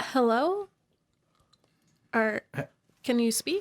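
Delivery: speaking quietly. A character checks on a barely breathing man with a sack over his head, speaking quietly. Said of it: "she like quietly goes like".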